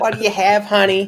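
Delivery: put-on high-pitched voice with a New York accent. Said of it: "like, what, a New York accent?".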